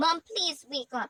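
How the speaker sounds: plain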